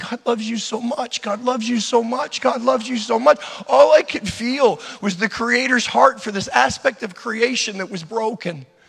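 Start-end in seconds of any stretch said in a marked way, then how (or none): 0.1-4.8 mock weeping, gentle, tender and tearful, repeated. Retelling stroking a bird tenderly and speaking to it: retelling own crying words. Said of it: "stroking the bird tenderly while crying".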